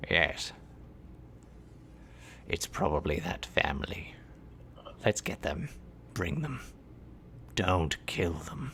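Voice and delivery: refined, cultured voice, guttural but smooth. The speaker voices a voice the listeners hear calling out, refined, guttural but smooth. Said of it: "It's a very refined voice in a weird kind of way, still guttural but smooth".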